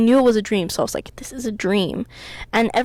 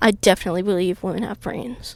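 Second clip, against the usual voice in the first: usual speaking voice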